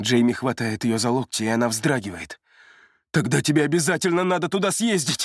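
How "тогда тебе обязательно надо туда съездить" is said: high, begging, pleading shout. Jamie grips Romily's elbows and urges her, a pleading shout. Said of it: "умоляюще кричит он".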